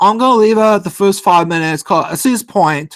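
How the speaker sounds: put-on, heavy, thick Liverpool northern English accent. Quoting a woman's response to him: thick Liverpool-Manchester UK accent. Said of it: "she has a really thick accent".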